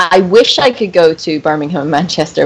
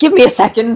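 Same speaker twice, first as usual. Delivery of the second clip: put-on old man voice, higher; 6 semitones higher than usual. Retelling answering a photographer at a con without false teeth: imitating own old-man voice. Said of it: "And I sounded like an old man".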